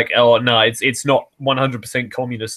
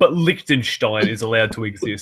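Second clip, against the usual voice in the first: plain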